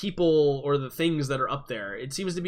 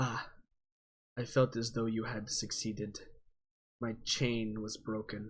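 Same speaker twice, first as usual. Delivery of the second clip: eerie, ominous, echoing voice, very hushed and quiet; 3 semitones lower, 9 dB quieter than usual. A game narrator voices something speaking to the players, in a weird ominous echoey voice. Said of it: "that weird ominous uh, echoey voice".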